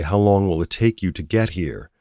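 ordinary talk

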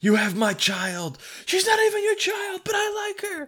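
very high fake yell, rising in pitch. Improvising a movie trailer scene with a scene partner, fake yelling. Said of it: "You're doing that thing where you're fake yelling".

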